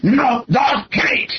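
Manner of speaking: put-on thick Greek accent. Retelling a man refusing the guide dog despite the letter, thick greek accent. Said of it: "in this very thick Greek accent".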